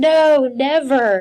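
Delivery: put-on loud, high yell, distant from the mic. Retelling yelling from the background as the husband answers the child, retelling a yell. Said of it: "I'm yelling in the background".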